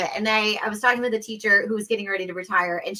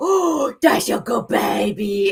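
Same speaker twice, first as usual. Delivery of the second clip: slow, doting voice used for dogs; 5 dB louder than usual. Retelling talking to dogs shown on a screen: doggy voice. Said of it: "my doggy voice would come out".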